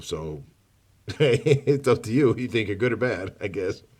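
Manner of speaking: talking through laughter. Addressing the bad people, laughing while talking. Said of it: "I don't know what I'm laughing about".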